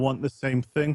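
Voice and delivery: ordinary talk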